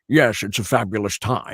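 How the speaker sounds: slow, big-screen Scottish film-star voice. Retelling how a friend's mom asked to hear the impression, Sean Connery impression. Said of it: "I heard you do a really good Connery".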